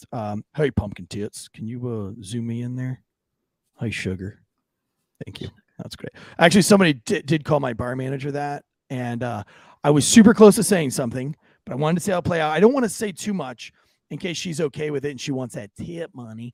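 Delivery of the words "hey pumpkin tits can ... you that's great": low, creepy, patronizing voice, laid on thick. Asking the producer to zoom the camera in, playing a chauvinistic pig. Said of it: "Let me be like a real chauvinistic pig really fast".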